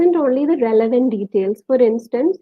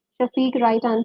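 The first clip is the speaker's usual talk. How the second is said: normal talking voice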